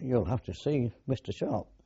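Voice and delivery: ordinary talk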